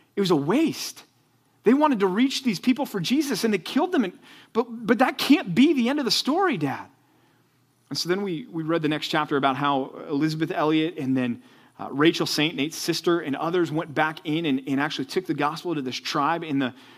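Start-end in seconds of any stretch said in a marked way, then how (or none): 0.2-6.9 acted, high, choked-up, almost tearful voice. Father retelling his son's reaction to a story, imitating Joshua choked up. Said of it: "almost emotional and choked up about it".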